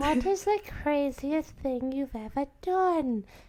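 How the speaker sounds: high put-on voice. Reading the next question aloud to the others: Dobby voice. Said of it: "I'm going to talk like Dobby".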